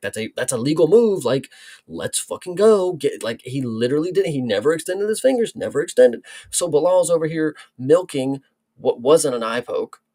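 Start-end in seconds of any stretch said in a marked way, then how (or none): 0.0-2.9 put-on loud yelling, mock shouting. Retelling watching a replay of a fight: imitating own yelling at screen. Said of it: "I'm sitting here yelling at the screen".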